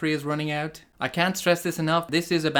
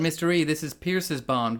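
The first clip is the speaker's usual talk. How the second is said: normal talking voice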